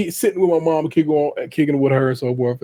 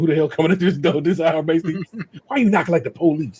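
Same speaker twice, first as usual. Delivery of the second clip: mock-scared voice, higher; 3 semitones higher than usual. Retelling knocking on the door late at night, imitating a scared mother. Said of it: "was scared to answer the door".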